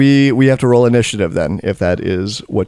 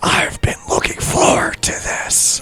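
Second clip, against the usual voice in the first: lich monster voice, quieter. Narrator voicing the lich as it looks at a player: lich voice. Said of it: "You don't like that voice?".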